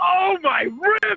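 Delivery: mock excited exclamation, eager cry. Repeating own exclamation on request, with the emotion felt today: imitating own excited exclamation. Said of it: "I was so excited".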